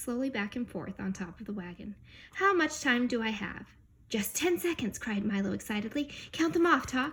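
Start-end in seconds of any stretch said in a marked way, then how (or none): none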